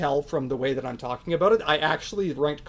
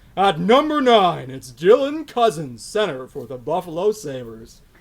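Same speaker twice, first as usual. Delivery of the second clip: loud sports announcer voice; 6 dB louder than usual. Counting down a ranked list of players on a podcast: announcer voice. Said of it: "do you want to do your announcer voice".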